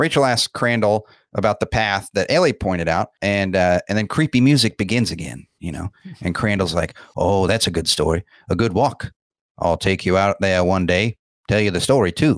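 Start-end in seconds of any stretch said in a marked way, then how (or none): 7.2-12.4 put-on thick country accent. Speaker recaps a film scene, voicing Crandall's thick Maine accent. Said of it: "I like that you're doing the accent too".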